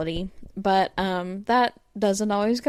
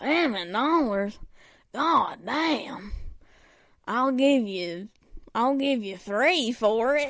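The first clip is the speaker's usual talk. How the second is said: heavy, classic-style smoker's voice; 3 semitones higher than usual. Retelling how she haggled over the bumper sticker price, classic smoker's voice. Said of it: "with her like classic like smoker's voice".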